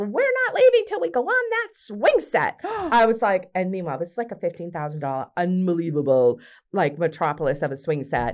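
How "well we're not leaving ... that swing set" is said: put-on, very high, shrill, demanding distant yell. Retelling how a woman outside yelled at the speaker: imitating her yelling. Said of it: "then she yells at me".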